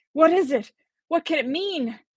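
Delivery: very high-pitched gasp of disbelief. Reading a scene aloud, a professor reacting to a statue: incredulous gasp. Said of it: "incredulously gasped".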